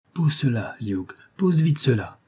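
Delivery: crying out in sheer terror. A young woman cries to a man handling a bracelet, terrified outcry. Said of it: "s'écria la jeune fille avec un regard de terreur".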